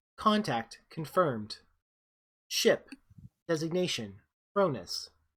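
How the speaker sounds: put-on ship's computer voice. Voicing the ship's computer announcing a contact: voicing Mother, ship computer. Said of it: "Mother's voice says".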